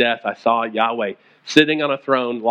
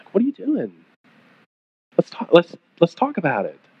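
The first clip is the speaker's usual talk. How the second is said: put-on gentle tone, higher, faster; 5 semitones higher than usual. Contrasting a frustrated parent with a gentle asker, acting out a gentle voice. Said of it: "But I think a gentle".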